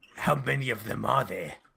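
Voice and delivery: exaggerated, disgusting, over-the-top New York accent. Asking a question in character after recovering the voice: disgusting new york voice. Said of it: "Disgusting New York voice".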